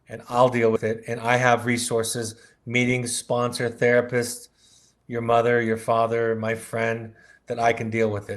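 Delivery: ordinary talk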